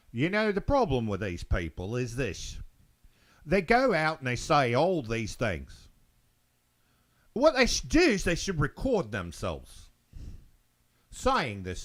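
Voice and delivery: horrible fake Australian accent. Retelling what a man said when he turned around: horrible Australian accent. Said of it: "I know it's horrible Australian accent".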